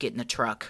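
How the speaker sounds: play-acted grave, whispered, breathy, dead-serious delivery. Retelling a father's order to get in the truck: imitating a very serious tone. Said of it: "in a very serious tone".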